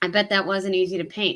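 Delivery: ordinary delivery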